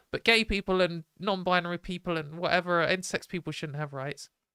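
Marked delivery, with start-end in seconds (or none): none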